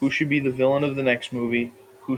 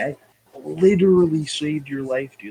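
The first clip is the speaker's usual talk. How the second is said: put-on fervent, worked-up, passionate, insistent outburst; 3 semitones higher, 3 dB louder than usual. Retelling a movie scene line: imitating a passionate outburst. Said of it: "says it again, but, like, so passionately".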